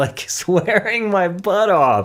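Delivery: high, slow, amused, laughing while talking.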